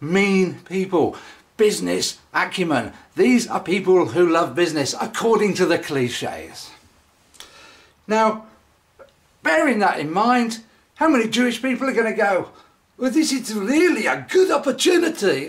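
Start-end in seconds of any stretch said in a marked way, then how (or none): 13.0-15.5 put-on faint hint of South African accent. Speaker voices what hypothetical people would say: slight south african accent. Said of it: "That sounds a little South African".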